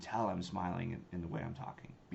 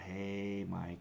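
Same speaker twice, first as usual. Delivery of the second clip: lingering, stretched-out, drawn-out delivery. Showing how to open a cold call with a drawn-out greeting. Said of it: "I do the drawn out".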